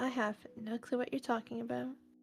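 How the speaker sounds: flat, expressionless deadpan delivery. Answering in character with a deadpan response. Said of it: "Deadpan response".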